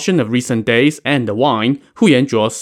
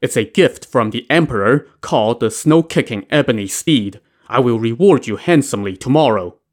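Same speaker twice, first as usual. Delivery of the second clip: usual speaking voice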